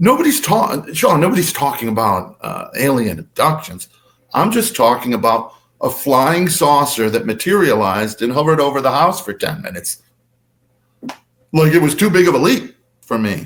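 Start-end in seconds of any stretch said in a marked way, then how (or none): none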